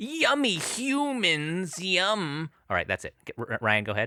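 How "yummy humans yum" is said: pitched-up virus character voice impression. Doing an impression of a disaster for the others: Twelve Monkeys virus impression. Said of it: "That was the virus from Twelve Monkeys".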